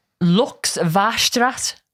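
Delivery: Dutch word said very slowly in German accent. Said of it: "pronouncing them as if they're German".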